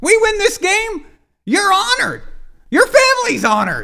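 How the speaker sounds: very high, squeaky, loud voice. Doing his best impression of Brady: squeaky Brady impression. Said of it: "my best impression of Brady with the squeaky voice and everything".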